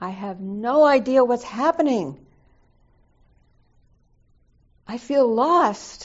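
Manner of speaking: very loud, sudden high blurt with swinging pitch. Recalling jumping off the cushion mid-conversation, retelling a sudden blurt. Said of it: "I jumped off my cushion and I blurted out".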